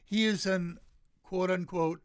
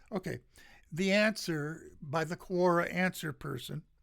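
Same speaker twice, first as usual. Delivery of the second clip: usual speaking voice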